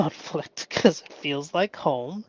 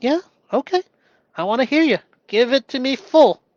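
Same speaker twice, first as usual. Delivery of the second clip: unbothered, calm, slightly higher pitch; 8 semitones higher, 3 dB louder than usual. Describing a calm listener answering an angry person, imitating a calm person. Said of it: "calm as a tree".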